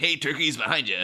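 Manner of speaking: brief, restrained, high-pitched, mild calling voice. Imagining how a scene might go: imitating Batman shouting. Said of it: "you don't want Batman shouting".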